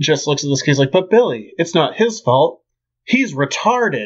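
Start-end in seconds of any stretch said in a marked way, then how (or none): 0.9-4.1 earnest, sincere, totally earnest delivery. Retelling a scene from an old TV episode: earnest Bill Bixby impression. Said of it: "so earnestly".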